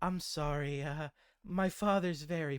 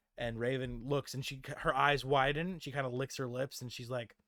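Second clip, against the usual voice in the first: ordinary talk, nothing marked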